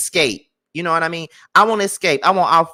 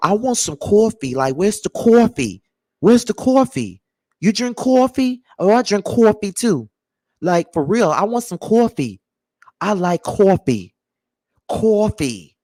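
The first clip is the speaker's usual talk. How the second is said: put-on strong, heavily leaned-into New York accent; 3 semitones higher than usual. Imitating how new york people talk: new york accent. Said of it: "I could hear that little New York uh accent so hard".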